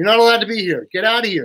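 acted yelling. Retelling how a woman yelled at the speaker: imitating someone yelling. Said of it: "she's yelling at me".

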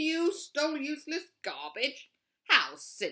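very loud, high, scornful scoffing jeer. A bear answers a burglar who only took trash from the bin; scoffing. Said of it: "scoffed Bear".

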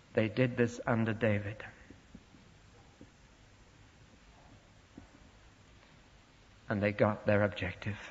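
hushed voice. Speaker addressing an audience, in a hushed voice. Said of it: "And I say this in a hushed voice".

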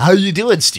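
loud, showy on-air radio-announcer voice. Greeting his friend Steve while showing off a radio voice. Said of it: "What do you think of my radio voice?".

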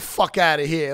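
put-on, exaggerated New York Bronx twang. Showing how he adds hype to his jokes; extra New York twang. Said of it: "I put an extra New York twang on it".

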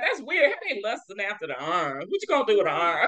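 high, mock-baffled church voice. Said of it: "I used to be like".

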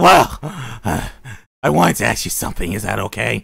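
eerie, unsettling, creepy, creaky put-on voice. Voicing her as she speaks to the new boy: creepy voice. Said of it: "time to go with a creepy voice for her".

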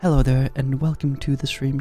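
hushed, gentle, ASMR-style soft voice. Greeting stream viewers, in a soft gentle ASMR-style voice. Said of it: "I'll be nice and gentle with my voice, and I'll make it sound like we're doing some A S M R type stuff".

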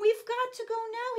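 excited high-pitched cry. Pilot, thought to be in bed, tells his parents they must go, excitedly crying out. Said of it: "he excitedly cried".

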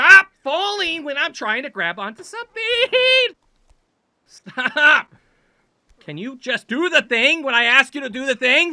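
exasperated, high-pitched shouting. Scolding something that won't do what it's supposed to, frustrated. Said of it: "It's because I'm getting frustrated".

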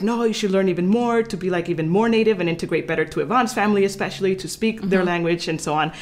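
normal talking voice

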